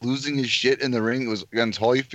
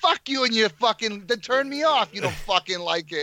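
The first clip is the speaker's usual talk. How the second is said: angry, high-pitched outburst, fired off; 8 semitones higher than usual. Retelling a post-fight interview with a reporter: angry Mike Tyson impression. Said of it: "angry Mike Tyson".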